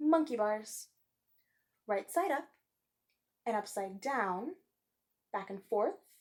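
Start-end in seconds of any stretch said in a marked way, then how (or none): 1.9-6.0 short, brief pause after down. Reading a poem aloud, pausing at commas: short pause after down. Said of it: "I'm going to pause just for a second at the commas".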